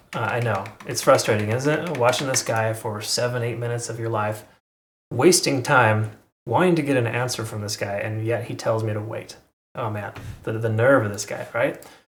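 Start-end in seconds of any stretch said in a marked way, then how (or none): none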